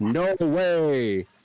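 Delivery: strange, odd mechanical robotic voice, drawn out. Retelling an odd moment in an episode: imitating a strange robotic voice. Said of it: "in a very strange robotic way goes".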